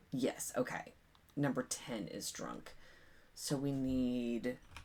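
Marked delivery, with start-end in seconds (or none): none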